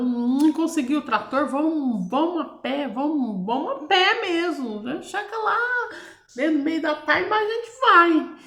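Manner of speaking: mock frantic, desperate, high pleading tone. Retelling the father's words about the tractor: imitating a desperate father.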